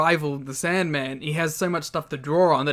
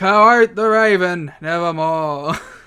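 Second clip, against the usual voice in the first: mock bored delivery, louder; 8 dB louder than usual. Imitating a wrestler rambling through a dark promo: imitating a bored wrestler's promo. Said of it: "He also just sounds bored the whole time".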